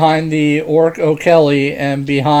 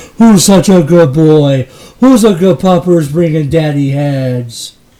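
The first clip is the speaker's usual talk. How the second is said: loud, booming orc voice; 5 dB louder than usual. Voicing a character praising a dog that brought a head: O'Kelly speaking Orcish. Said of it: "O'Kelly says in Orcish".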